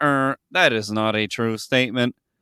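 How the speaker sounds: put-on robot character voice. Retelling what the robot companion said when asked if it's true: imitating the robot companion. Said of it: "And he's like".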